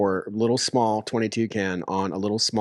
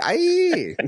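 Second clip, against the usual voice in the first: shrill, very high-pitched yell. Retelling how a friend reacted while dancing around: imitating a friend shouting aye. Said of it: "That's a pretty good impression".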